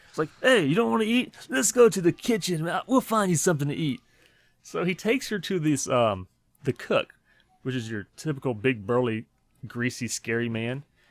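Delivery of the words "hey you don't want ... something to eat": put-on New Jersey accent, pitched up. Retelling a movie's camp counselor offering to find a girl food, in a new jersey accent. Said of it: "real, real New Jersey like".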